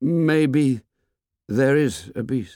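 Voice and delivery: halting, unsure, hesitant, tentative delivery. Simon, for whom speaking in assembly is terrible, speaks up hesitantly. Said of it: "he said hesitantly".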